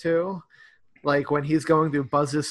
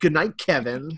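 put-on snarky, sarcastic delivery. Retelling a movie scene where the mom sends him upstairs: imitating Kevin saying it sarcastically. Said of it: "sarcastically like".

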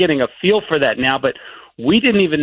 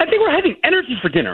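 very high, pumped-up, amped-up put-on hype voice; 11 semitones higher than usual. Asked about Thanksgiving dinner, answering in an energetic hype voice. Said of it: "In my hype voice".

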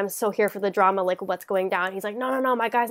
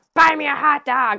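mock yell, high, loud and drawn out; 5 semitones higher, 5 dB louder than usual. Speaker retells a guy yelling at a man counting his tip money, retelling a man's yell. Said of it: "this guy just yelling at him".

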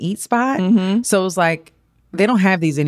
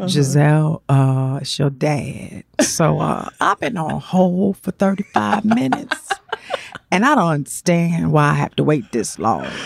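put-on, mimicked very slow speech. Retelling her dad's prank phone call, imitating him talking real slow. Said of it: "he talked real slow".

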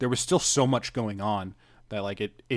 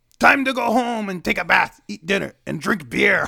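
very high, loud, creaky, raspy, gleeful put-on character voice; 10 semitones higher, 8 dB louder than usual. Recapping a show, trying to do Kogoro's voice celebrating a case. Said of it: "let me see if I can do his voice".

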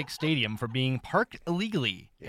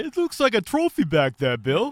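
drawn-out put-on New Jersey accent; 7 semitones higher, 7 dB louder than usual. Imagining a tow truck driver finding the cup: put-on New Jersey accent. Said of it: "What kind of accent was that".

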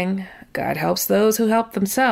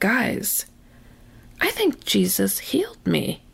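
quiet, soft, slow hushed murmur; 2 semitones higher than usual. Recounting speaking up to a group, retelling speaking quietly. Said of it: "and I say quietly".

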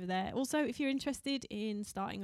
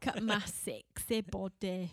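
put-on Scottish Glasgow accent. Joking about a film, quoting a line in a glaswegian accent. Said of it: "in the Glaswegian accent".

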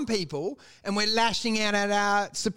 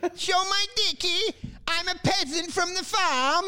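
put-on mock Kazakh accent, higher pitch; 9 semitones higher than usual. Mocking how a comedian's character talks: Borat voice. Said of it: "a mock Kazakhstanian accent".

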